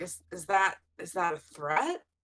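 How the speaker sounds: leaning in, suspicious. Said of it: "lean way down to be like".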